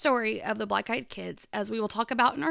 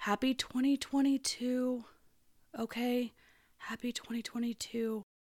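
very quiet, hushed, much slower delivery; 6 dB quieter than usual. Opening a paranormal story for listeners, saying the first greeting very quietly. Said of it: "I want to say very quietly".

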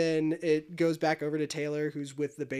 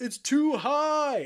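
shrill, very high, drawn-out stretched yell; 10 semitones higher, 4 dB louder than usual. Retelling what a man yelled at a grand slam, retelling a yell. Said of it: "and he yells".

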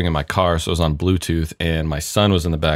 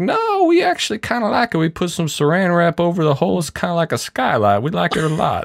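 put-on Southern accent, high and swooping; 12 semitones higher than usual. Retelling your answer to a spam caller about needing a new roof, use a put-on Southern accent. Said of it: "I always get a Southern accent".

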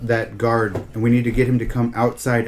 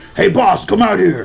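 gruff, rough, raised put-on orc voice; 8 semitones higher, 6 dB louder than usual. During a game, a player speaks in their best orc impersonation. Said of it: "in my best orc impersonation".

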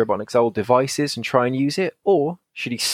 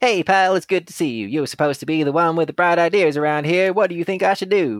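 small, tiny, nasally, grating cartoon voice; 4 semitones higher than usual. Reading a Sonic story aloud and voicing Sonic, tiny nasally Sonic voice. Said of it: "The tiny little nasally annoying as fuck Sonic".

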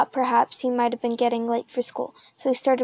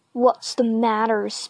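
insistent, demanding tone. Spider, an older schoolboy, confronts John eating a leather glove, demanding. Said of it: "Spider demanded".

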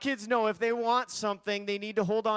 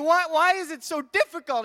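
mock, loud, high-pitched angry yell; 7 semitones higher, 6 dB louder than usual. Retelling getting angry at hoarding shows on tv: retelling own yelling. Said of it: "I'm yelling at the T V".

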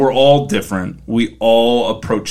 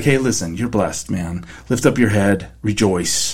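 much softer, soft-spoken delivery. Retelling the angel's return, the speaker quotes the angel in a much softer tone. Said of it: "He's being much softer in his tone".

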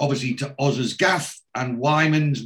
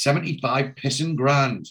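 ordinary delivery

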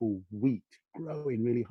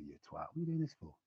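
mock cynical voice; 6 semitones lower, 11 dB quieter than usual. Acting out the inner voice that says one is crazy: imitating a cynical inner voice. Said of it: "it's like a cynical voice".

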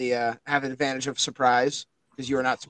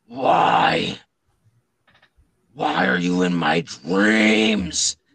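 very low, very slow werewolf growl; 6 semitones lower, 7 dB louder than usual. Voicing a wounded werewolf who growls at the player: werewolf growling. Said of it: "growls at you".

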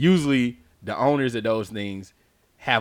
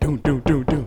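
thudding, thumped-out knocking sound effect. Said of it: "knock on the door".

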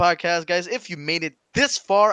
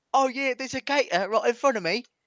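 put-on British accent, pitched up; 6 semitones higher than usual. Switching accents on request, the speaker redoes the gator line in a put-on british accent. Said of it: "That's British".

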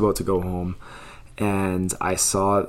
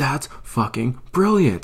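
put-on screaming, higher pitch; 5 semitones higher than usual. Retelling a man screaming on the side of the road, retelling a man screaming. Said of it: "As he's screaming on the side of the road".

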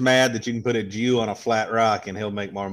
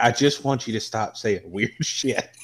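plain

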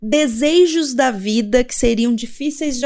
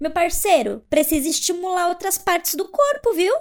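play-acted fury, rattled off fast and high; 6 semitones higher, 3 dB quieter than usual. Telling a story, the speaker quotes a woman rebuking a man who pestered her, imitating an angry retort. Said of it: "ela ficou muito brava".

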